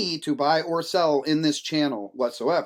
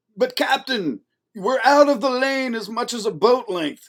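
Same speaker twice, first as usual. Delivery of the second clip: clumsy fake Russian accent, pitched up; 9 semitones higher, 4 dB louder than usual. Retelling a crew member addressing the captain in a submarine film, use a bad russian accent. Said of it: "my Russian accent".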